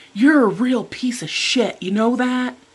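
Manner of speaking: angry, high-pitched, thrown-out scream. Retelling what he said, looking the speaker in the face: retelling an angry scream. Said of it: "he like screaming at me".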